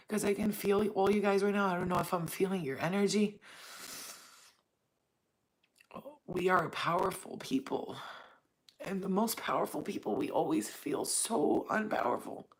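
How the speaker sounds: teary voice, speaking through tears. Speaker addressing the audience as 'you guys', crying. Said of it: "I'm crying for us".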